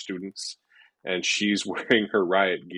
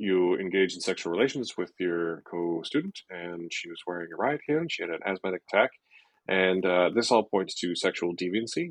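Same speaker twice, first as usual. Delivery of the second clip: plain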